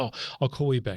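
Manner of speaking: ordinary delivery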